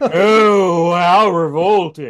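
loud, clenched-jaw snooty drawl with drawn-out oh. Comparing him to country-club rich guys, the speaker shows how he talks: Trax impression. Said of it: "he talks like this".

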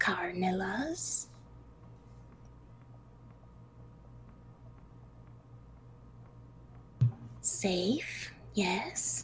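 creepy, many-layered, horrible whispered spider voice. Narrating a scene, voicing a spider that whispers, horrible whispered spider voice. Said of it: "it whispers in its, like, horrible spider voice with, like, eight different tones stacked".

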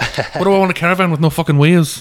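put-on strong, hard-to-follow Irish accent. Quote a movie to fellow fans, imitating a film character's hilarious accent. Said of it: "his accent is hilarious".

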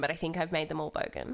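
ordinary delivery

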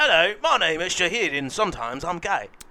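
put-on bad British accent. Pressed by a friend to show his British accent: bad mock British accent. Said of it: "British accent".

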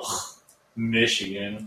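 loud, disgusted, scornful scoff.

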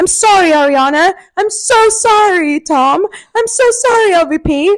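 slow, drawn-out, put-on British accent. Act out what Raquel should have said to Ariana, Tom and LVP, in a put-on British accent. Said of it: "Just gone into a British accent".

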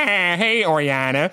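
put-on cartoon dad voice. Describing a character's dad in a booklet: Peter Griffin voice. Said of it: "her dad is just Peter Griffin with a beard".

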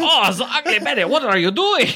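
very high-pitched put-on French voice. Imitating the French version of a recurring character narrating: French Jimmy Dimples voice. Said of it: "That's why I got French".

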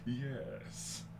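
villainous voice, soft and fairly deep. Comparing Megatron voices, showing how the Beast Wars version sounds: Beast Wars Megatron voice. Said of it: "he sounds more like this".

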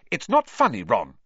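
curt, sharp, reproachful tone. Reading a story aloud, a character scolds a laughing friend: sharply. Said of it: "said Hermione sharply".

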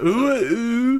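high, loud, squealing, mocking ooh ooh.

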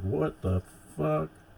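very high, freaked-out, panicked shriek. Recounting a scene, the speaker acts out a mouthless man panicking: retelling a scream. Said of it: "screams like".

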